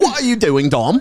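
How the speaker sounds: very high put-on British accent. Acting out how she would scold someone: put-on british accent. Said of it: "with their British accent?".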